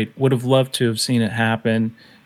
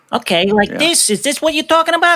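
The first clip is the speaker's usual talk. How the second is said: put-on Brooklyn accent, much higher pitch. Retelling how you answered his request to hear your brooklyn, in a brooklyn accent. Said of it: "let me hear a little bit of your Brooklyn".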